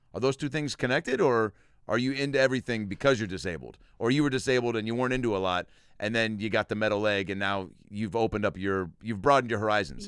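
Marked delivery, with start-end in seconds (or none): none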